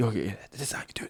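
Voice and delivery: very quiet, barely voiced, secretive whisper. Speaker re-enacting what they whispered to each other: retelling a whisper. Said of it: "like whispering to each other".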